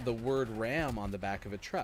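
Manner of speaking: usual speaking voice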